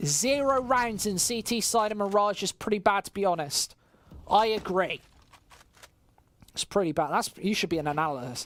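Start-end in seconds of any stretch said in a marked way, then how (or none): none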